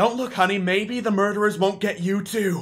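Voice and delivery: whispered voice. Voicing a frightened townsperson warning a child as the party passes: townsperson whispering. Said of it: "you hear whisper".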